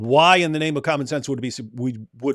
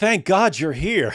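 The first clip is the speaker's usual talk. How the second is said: dry mocking sarcasm, pitched up; 5 semitones higher than usual. Telling the others what someone just said, imitating a sarcastic tone. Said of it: "like sarcastically".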